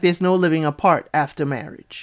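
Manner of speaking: ordinary talk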